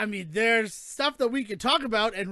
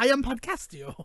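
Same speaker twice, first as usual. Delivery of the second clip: bad put-on cartoon character voice. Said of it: "that terrible accent that you put on".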